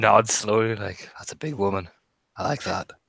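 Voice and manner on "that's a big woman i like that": muttered under breath, much lower and quieter. Describing a man staring as a woman comes over: muttered under breath. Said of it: "Under his breath".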